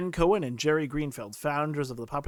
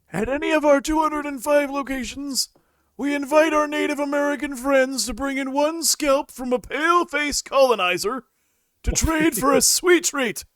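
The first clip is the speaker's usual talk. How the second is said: put-on loud, very high-pitched old-man voice; 11 semitones higher, 7 dB louder than usual. Reading a satirical news quote attributed to Jerry in a semi-Biden voice: semi-Biden voice. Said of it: "a semi-Biden voice".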